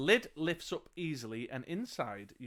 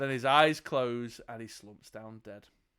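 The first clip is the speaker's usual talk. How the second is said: ordinary delivery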